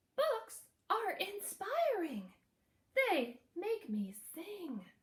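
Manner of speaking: high, slow put-on little yellow bird voice. Reading a story aloud, voicing the little yellow bird's words: little bird voice. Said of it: "So I'm going to put on my bird voice".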